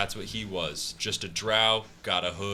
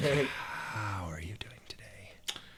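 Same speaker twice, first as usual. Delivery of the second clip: airy, breath-heavy, soft, very slow, drawn-out voice; 7 dB quieter than usual. Describing how a character always talks, the speaker imitates: really breathy voice. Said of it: "he always just goes into it with a really breathy, like".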